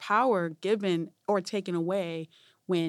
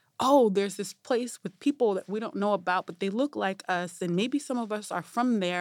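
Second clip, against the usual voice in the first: plain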